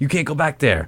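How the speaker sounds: loud, hollered yelling. Speaker recalls being told off at the farm they helped build; retelling someone yelling. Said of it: "And PSA was yelling at me".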